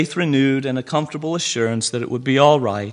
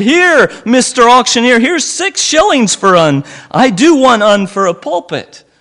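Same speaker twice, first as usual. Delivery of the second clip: eager, raised, pitched-up cry; 9 semitones higher, 9 dB louder than usual. Narrator reading a man bidding to the auctioneer, with an eager cry. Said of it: "All eager to have his pulpit, he cried".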